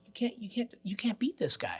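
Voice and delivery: soft, unvoiced, awed whisper. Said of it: "the audience go".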